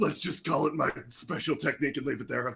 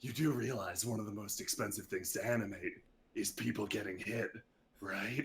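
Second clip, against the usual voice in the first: hushed half-whisper right up close; 7 semitones lower, 9 dB quieter than usual. A player speaks into an opponent's face during a tabletop fight, half-whispering. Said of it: "He whispers into your face".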